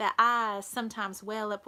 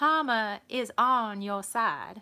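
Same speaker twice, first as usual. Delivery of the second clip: put-on American southern drawl, stretched out. Reading out someone's card, put-on southern drawl. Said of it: "continue my southern drawl".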